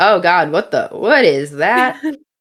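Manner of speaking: stunned, startled, confused, baffled tone. Telling a story, the speaker acts out a woman seeing a worm, in mock astonished confusion. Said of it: "in sheer astonishment and confusion".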